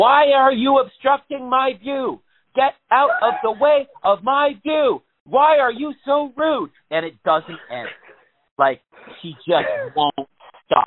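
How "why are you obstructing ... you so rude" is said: put-on scream, higher and louder. Retelling how a woman reacts to passersby: imitating someone screaming. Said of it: "she screams at you".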